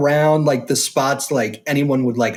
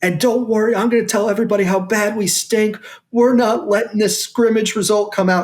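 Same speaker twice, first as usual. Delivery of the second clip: loud, high-pitched raised voice, locker-room style; 6 semitones higher than usual. Retelling words spoken to the players in the locker room: imitating talking loudly. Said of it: "yelling, like, talking loudly to the guys".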